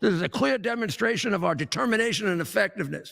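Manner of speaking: normal talking voice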